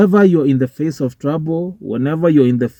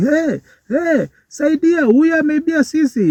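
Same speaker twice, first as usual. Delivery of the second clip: put-on scream, higher pitch; 12 semitones higher than usual. Retelling a man chasing a motorbike thief: imitating someone screaming for help.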